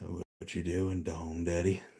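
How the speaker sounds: low, soft, deep put-on phone voice. Imagining a joke phone call to the man in the intro video, deep voice. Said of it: "I just in a deep voice going".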